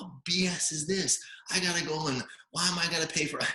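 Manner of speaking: very high, angry, fed-up outburst. Retelling a woman's angry phone call to his wife, in a mock-angry rant. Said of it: "she calls my wife and she's pissed".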